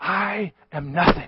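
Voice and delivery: imitated whisper. Retelling what the conductor said to the orchestra: imitating a whisper. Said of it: "he whispered something at them".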